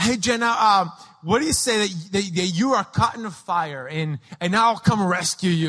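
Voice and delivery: ordinary talk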